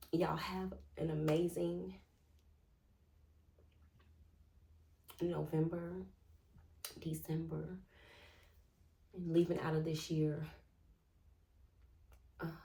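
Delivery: tearful voice, crying while talking. Saying goodbye to viewers after recalling lost loved ones, crying while talking. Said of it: "it's okay that I am crying".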